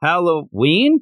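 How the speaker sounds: play-acted confused, puzzled tone on one word. Retelling a scene where a guy answers: imitating a puzzled question. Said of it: "the guy looks and goes".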